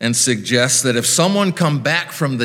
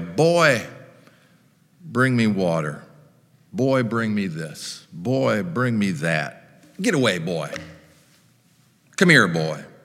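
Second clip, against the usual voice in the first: mock rich old man, lordly, bossy, hollering; 3 semitones lower than usual. Speaker retelling a rich man in hell calling for his water boy, acting out hollering for water boy. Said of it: "had hollered for his water boy".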